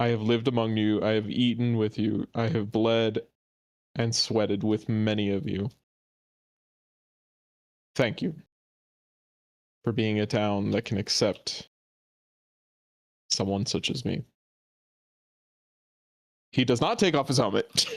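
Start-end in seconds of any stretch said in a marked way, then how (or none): 0.0-14.2 big, carrying, deep bass big-man voice. Voicing a big warrior thanking the town, big projecting voice. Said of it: "Ashrad's just such a big dude that it just projects".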